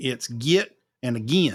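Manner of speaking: Appalachian-accented words. Explaining the words that show they've lapsed back after time home, Appalachian pronunciation. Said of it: "if I'm back home for too long".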